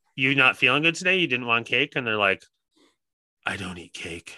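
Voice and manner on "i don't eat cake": barely audible whisper. Retelling a fellow non-cake eater's answer, in a whispering Batman voice. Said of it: "in a whispering, almost like a Batman voice".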